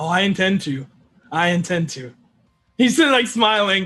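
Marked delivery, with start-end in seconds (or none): 0.0-2.1 slow, creepy, unsettling psychopath tone. Voicing a character who plans to stay, sounding like a psychopath. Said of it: "You sound like a psychopath".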